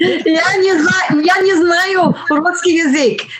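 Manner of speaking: broken Russian through laughter.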